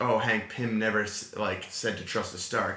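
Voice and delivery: ordinary talk, nothing marked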